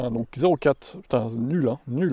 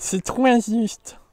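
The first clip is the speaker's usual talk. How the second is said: put-on very high, babyish, complaining baby voice; 10 semitones higher than usual. Joining in as well, the speaker delivers a line in a baby voice. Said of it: "Je fais ma voix de bébé moi aussi".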